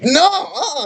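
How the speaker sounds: put-on, very high-pitched, firm half-yell. Retelling telling off a coworker who was trying to argue: imitating herself yelling. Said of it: "I kinda yelled at her".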